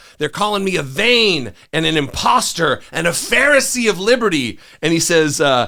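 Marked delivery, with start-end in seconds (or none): 0.2-4.6 mock high, wailing, aggrieved scream. Show how you picture John Adams being depicted, imitating John Adams screaming and wailing. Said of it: "he's screaming and wailing about".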